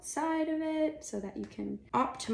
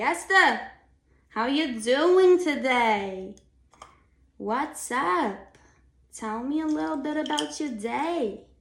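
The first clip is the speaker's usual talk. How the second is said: very loud, slow, put-on New York accent; 4 semitones higher, 10 dB louder than usual. Speaker showing how they talk to a ninety-two-year-old woman, in a put-on accent. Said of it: "I just talk in that accent".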